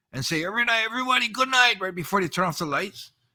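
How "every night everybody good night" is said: put-on big raised shout, pitched up. Recalling nights in prison, the speaker re-enacts their nightly call before lights out: retelling a loud shout. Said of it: "scream out in a big voice".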